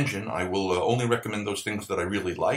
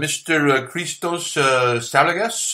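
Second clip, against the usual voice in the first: slight, slow Greek accent on the name; 5 semitones higher, 6 dB louder than usual. Podcast host names his guest, a cookbook author, with a slight Greek accent. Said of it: "I'm trying to give it a little bit of a Greek uh, accent".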